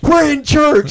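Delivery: high, loud, stern, scolding tone.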